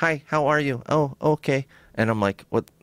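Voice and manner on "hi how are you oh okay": put-on halting, very slow broken-English accent, pitched up. Retelling how a woman in the car suddenly started talking: broken English accent. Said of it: "like in like broken English".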